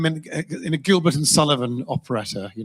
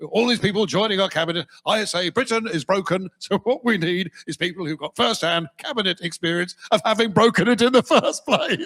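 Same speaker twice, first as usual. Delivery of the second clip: words broken up by put-on laughter; 3 semitones higher than usual. Mocking a politician's speech, laughing through every sentence: imitating Farage laughing mid-sentence. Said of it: "can't get to the end of a sentence without laughing".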